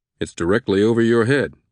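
ordinary delivery, nothing marked

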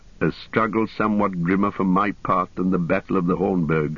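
plain

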